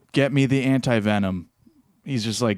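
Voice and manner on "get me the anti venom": ordinary talk, nothing marked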